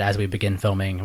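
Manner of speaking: usual speaking voice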